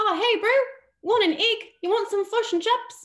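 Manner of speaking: high, loud, belted mock New Zealand accent. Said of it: "the New Zealand accent is like, they say".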